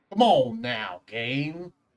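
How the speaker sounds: slow, loose, vague put-on Western accent. Repeating the line for the other player: vaguely Western accent. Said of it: "It is a vaguely Western accent".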